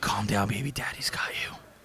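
put-on sultry whisper. Imagining what one man whispered to another in a scuffle; mock sensual whisper. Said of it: "a nice sensual whisper in the ear".

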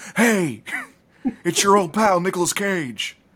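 drawn-out, high-pitched words. Imagining waking up next to the actor: Nicolas Cage impression. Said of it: "he was like".

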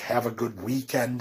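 ordinary talk

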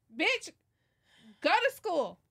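exasperated, irritated scolding tone. Reacting to someone on the screen: yelling at someone on screen. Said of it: "I thought you were yelling at me".

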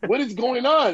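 high, loud panicked voice.

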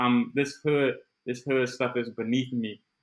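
plain

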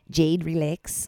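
poor put-on Australian accent. Retelling what a woman said to you, in a bad Australian accent. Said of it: "I cannot find an Australian accent".

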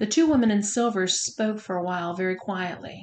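ordinary delivery

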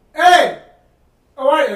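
mock yelling. Retelling how the guy walked in and greeted them: imitating someone yelling. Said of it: "Like, yelling at me".

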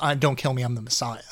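ordinary talk

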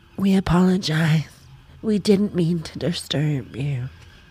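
put-on American accent, very slow. Quoting a woman's apology from a car window: american accent. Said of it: "I have to say it in an American accent".

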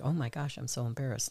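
put-on heartbroken woman's voice. Retelling how the speaker's mother reacted to another audition, imitating a devastated mother. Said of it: "my mother was devastated".

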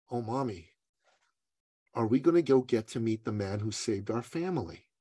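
quiet, soft and very serious. Retelling a mother's story, the speaker quotes her young son: imitating a quiet, serious child. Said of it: "really quiet, really serious".

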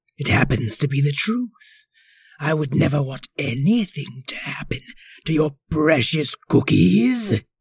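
wicked, sinister, exasperated, yet polite tone. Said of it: "said [name], the violinist of this particular orchestra. ... We both have such sinister-sounding voices".

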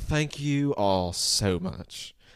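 slow Southern drawl, every vowel stretched. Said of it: "my impression's not as amazing as his".

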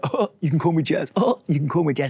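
high, mocking, teasing, laughing-at-you parroting repeat. Retelling how teammates repeated the name to tease: imitating others mocking him. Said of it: "banter popcorn where everyone just go".

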